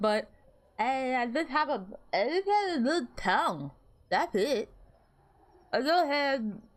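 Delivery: words formed with tongue sticking out. Explaining to the other speaker why their mouth is glowing, talking with tongue out. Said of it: "Why am I talking with my tongue out?".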